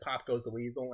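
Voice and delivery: normal talking voice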